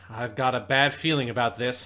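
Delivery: plain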